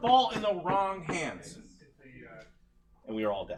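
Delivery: severe, stern, swooping regal voice. A character speaking to the king in an actual-play game scene, stern. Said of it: "So [name] is being very stern right now. / uh, [name] leans back in his chair. / So [name] is being very stern right now. / So [name] is being very stern right now".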